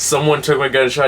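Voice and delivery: ordinary talk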